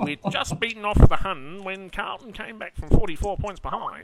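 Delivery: fifties newsreel narrator voice. Speaker tries an old newsreel announcer voice they say they can't do well. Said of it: "I can't really do that voice very well".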